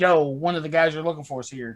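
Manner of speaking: usual speaking voice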